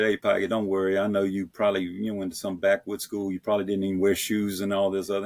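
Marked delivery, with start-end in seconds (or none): none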